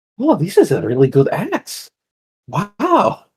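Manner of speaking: mild disbelief. Voicing a character inspecting an axe: acting slight disbelief. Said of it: "in slight disbelief".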